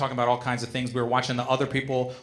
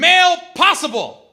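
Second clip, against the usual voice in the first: yelled at full volume, very high and shrill; 12 dB louder than usual. Retelling how a female security guard called out at a metal detector, imitating a very loud yell. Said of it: "in a very loud voice yelled out".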